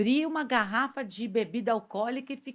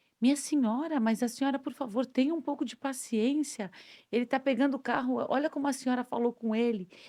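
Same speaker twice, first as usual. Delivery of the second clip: usual speaking voice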